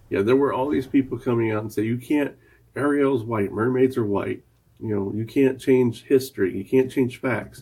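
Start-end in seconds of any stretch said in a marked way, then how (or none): none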